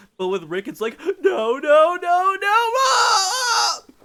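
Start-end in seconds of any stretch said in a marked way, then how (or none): 1.2-3.8 shrill, very loud, very high, drawn-out frantic shriek. Describing a game where characters scream on losing health, imitating Rick's manic scream. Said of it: "screams manically".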